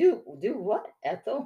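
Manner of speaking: sweetly innocent, guileless tone. Retelling a character's reply in a scene: imitating an innocent voice. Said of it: "just in such an innocent voice".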